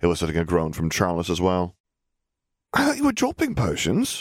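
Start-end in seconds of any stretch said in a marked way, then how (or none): 2.7-4.2 very high, swooping, bewildered lilt. Hearing a classmate grumble about potions class, someone responds, confused. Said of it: "Poppy said confusedly".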